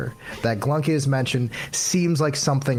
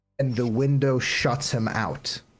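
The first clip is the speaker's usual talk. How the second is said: ordinary talk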